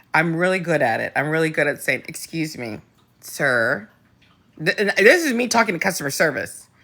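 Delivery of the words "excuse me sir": stern, no-nonsense schoolteacher tone. Speaker demonstrates how they talk to customer service; teacher voice. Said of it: "I do teacher voice".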